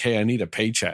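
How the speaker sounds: usual speaking voice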